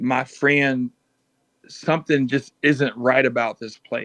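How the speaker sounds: low, close, confiding tone. In a role-playing game, a player's character speaks to his friend, low tone. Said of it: "in a low tone say".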